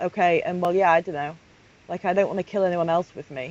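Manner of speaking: ordinary talk, nothing marked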